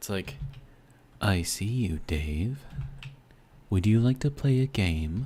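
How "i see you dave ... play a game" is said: slow, raised, self-admittedly poor character voice. Leading a listener along on a little journey, the speaker tries an attempted character voice. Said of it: "I can't do that voice very well".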